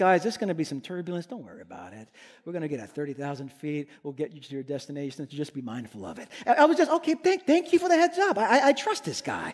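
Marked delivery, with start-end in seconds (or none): 0.0-6.3 very soft, very low, confident, soothing calm voice. Retelling the pilot's announcement before a turbulent flight, imitating pilot's soothing, calm voice. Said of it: "in a very soothing, calm, confident voice".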